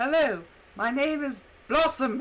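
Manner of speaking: put-on funky-sounding male voice with a British accent. Quoting how hers says her name, in the male British voice. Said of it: "it's the the male British voice".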